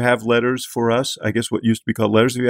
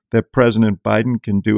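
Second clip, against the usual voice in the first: ordinary talk, nothing marked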